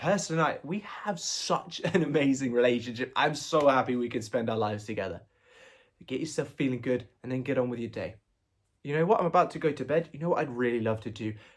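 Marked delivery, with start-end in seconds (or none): 0.0-5.2 wholehearted, enthusiastic, gusto-filled delivery. Showing how to say a relationship affirmation: said with a smile and gusto. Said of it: "Say it with some gusto".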